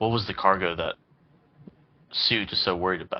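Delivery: spoken in a low, hushed voice. Voicing his character after offering to take the first shift: hushed tone. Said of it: "in a hushed tone".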